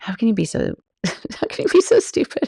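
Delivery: put-on giggling, high-pitched and laughing. Retelling walking back out of the wrong restroom: retelling laughing at herself. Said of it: "I was just laughing, like".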